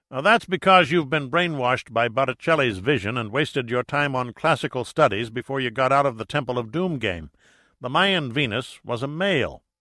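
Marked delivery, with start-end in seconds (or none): none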